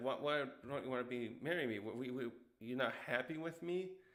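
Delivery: ordinary talk, nothing marked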